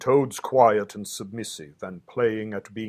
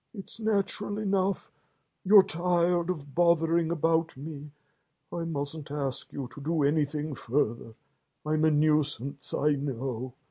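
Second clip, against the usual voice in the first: feeble, faded, weak, higher-pitched murmuring voice; 7 semitones higher than usual. Narrator reads a character lying still, speaking to the Rat, weaker murmuring voice. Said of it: "He certainly lay very still and flat, and his voice was weaker, and his manner much changed. / murmured [name], / and his voice was weaker, / and his voice was weaker".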